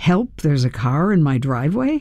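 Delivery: ordinary delivery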